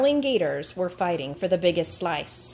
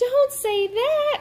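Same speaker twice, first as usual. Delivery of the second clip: very high, alarmed, frightened squeaking. Alarmed at a friend's words to the gators, squeaking in a fright. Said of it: "squeaked Alice in a fright".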